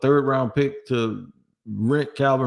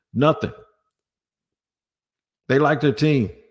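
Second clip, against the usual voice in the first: mocking, sarcastic voice. Talking about the team making no trades: sarcastic tone. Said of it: "I'm being sarcastic when I say that".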